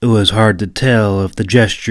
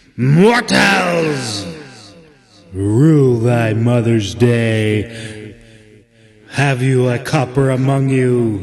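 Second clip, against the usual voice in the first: horrible ghostly oracle voice, very slow and drawn out; 2 semitones higher than usual. Narrating a story, voicing the oracle in the bog, horrible haunted oracle voice. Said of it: "The oracle's horrible, haunted voice".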